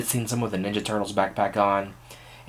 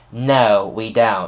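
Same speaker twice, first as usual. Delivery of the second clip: put-on sassy tone, louder; 4 dB louder than usual. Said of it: "she gave me a little sass".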